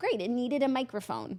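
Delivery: ordinary talk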